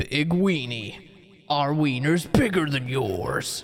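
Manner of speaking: put-on ad announcer voice, sold like a commercial. Offering to do the voice for a catchphrase, in a put-on slogan voice. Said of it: "I could do the voice for you".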